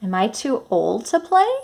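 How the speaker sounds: pitch rises at the end on "play". Reading a story aloud at a question mark, rising question intonation. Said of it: "I changed my voice to make it sound like I was asking a question".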